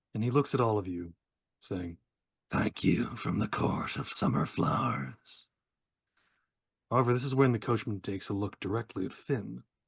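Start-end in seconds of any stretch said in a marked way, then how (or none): 2.5-5.4 rough, gruff, rasping voice. Narrator voicing a coachman speaking to the party at the port, gruff, raspy voice. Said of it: "in a very kind of gruff, raspy sort of voice".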